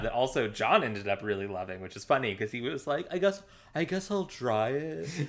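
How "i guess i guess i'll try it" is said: bad, barely British fake accent, pitched up. Retelling what John said when trying the drink: horrible John impression. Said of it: "Your John impression is horrible".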